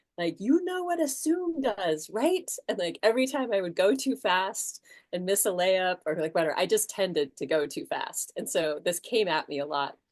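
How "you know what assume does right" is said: very high, loud, booming coach-style scream. Retelling how he screamed at you in practice when you went too fast, imitating Mister Bean screaming. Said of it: "he would scream at us".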